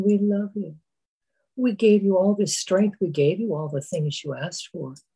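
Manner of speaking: very soft, gentle speaking. Speaker voicing demonic forces calling to someone in hell, in a very gentle voice. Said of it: "calling to you in a very gentle voice".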